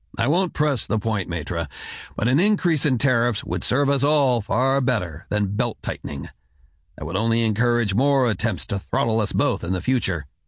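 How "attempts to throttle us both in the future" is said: ordinary delivery, nothing marked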